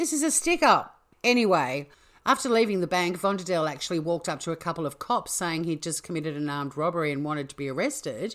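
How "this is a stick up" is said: put-on plummy English accent, pitched very high. Retrying a bank robber's stick-up line after a failed attempt, put-on english accent. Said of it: "I can normally do quite a good English accent".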